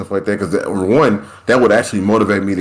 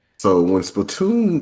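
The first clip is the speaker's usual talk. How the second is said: breaking voice, cracking mid-phrase. Taking the floor to start a point, speak with your voice cracking. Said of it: "that was my voice cracking".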